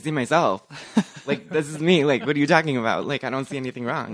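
loud, sarcastic, dismissive tone. Retelling own answer to mom's mirror question: imitating own sarcastic reply. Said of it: "my sarcastic ass kind of just was like".

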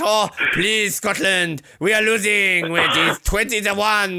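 put-on French accent. Mocking a losing team begging, mock french curler voice. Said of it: "like the French".

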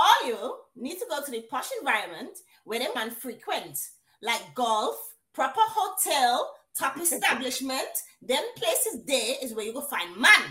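put-on Grenadian island accent throughout. Relaying what she said, in a Grenadian accent. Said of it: "I'm going to do it in Grenadian".

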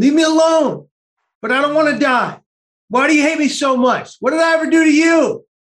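hollering. Recalling sitting in the back row of a bus, retelling a yell. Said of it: "I'm yelling".

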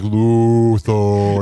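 put-on loud, low voice. Retelling the end of a prank call, imitating a loud, low voice. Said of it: "Why are you so loud?".

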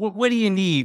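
very high, disgusted, repulsed voice. Speaker retelling what a woman said when the speaker wanted to come home, imitating her disgust. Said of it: "so disgusted".

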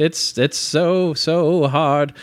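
put-on high, slow, grand old-Hollywood star voice.

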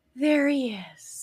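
sighed, swooning delivery. Retelling how mom reacted to an actor's first appearance: imitating a sigh. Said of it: "sighed and went".

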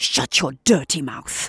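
hissed threateningly. Having just punched the man who insulted them, he leans over him: menacing hiss. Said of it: "hisses Lewis, leaning over menacingly".

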